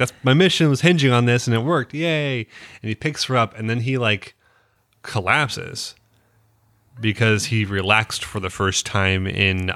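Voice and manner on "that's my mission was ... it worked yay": acted, bursting with excitement, pitched-up voice. Retelling a show character's reaction when his mission worked: imitating someone super excited. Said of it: "But he's like super excited".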